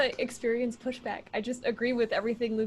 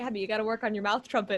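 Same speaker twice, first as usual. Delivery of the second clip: plain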